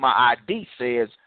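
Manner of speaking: plain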